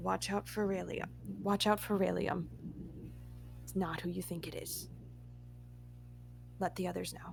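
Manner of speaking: very quiet, breathy, secretive whisper. In a game scene, a character secretly warns another: whispering under her hand. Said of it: "as she whispers under her hand".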